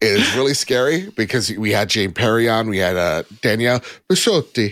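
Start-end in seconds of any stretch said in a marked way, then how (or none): 3.4-4.7 pronounced with Italian-style flair. Saying a guest's name the way she said it: name with Italian flair. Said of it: "That's how she said it".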